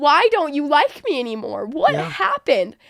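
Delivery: slow, swooping speech through sobs. Retelling begging a best friend who dropped her: retelling a sobbing plea. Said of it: "I was sobbing my eyes out to her".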